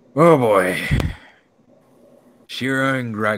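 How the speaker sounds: high, loud voice, choking back tears.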